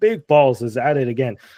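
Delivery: ordinary delivery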